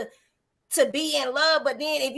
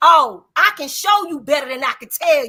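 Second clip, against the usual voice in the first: firm, raised commanding delivery; 7 dB louder than usual. Showing how a phrase sounds in a certain tone: firm listen-up tone. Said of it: "if I say it in this tone".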